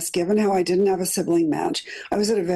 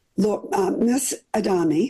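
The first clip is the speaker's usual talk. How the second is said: put-on German accent. Retelling a phone call from UCLA, imitating Sven DeVos's German accent. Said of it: "this voice with a G- German accent said".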